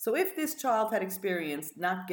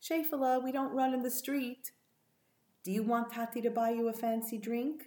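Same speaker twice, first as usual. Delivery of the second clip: mock kind, gentle, coaxing fatherly tone, lightly raised; 6 semitones higher than usual. Recounting a father speaking to his running two-year-old: quoting a kind, gentle voice. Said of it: "said in a kind and gentle voice".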